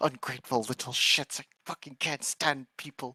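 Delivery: quiet grumbling under the breath. Voicing a character walking away from people, muttering under breath. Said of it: "He's gonna mutter in Druidic as he's walking away".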